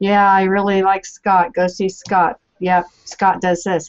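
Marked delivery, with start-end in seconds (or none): 0.0-2.4 flat, unexcited monotone with zero enthusiasm. Showing a dull way to recommend a collaborator: deadpan, no enthusiasm. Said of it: "instead of just the deadpan".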